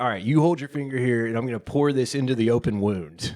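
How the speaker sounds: play-acted thrilled, eager, keen delivery. Retelling what the wife said before pouring alcohol in the wound: imitating someone excitedly. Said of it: "she was so excited".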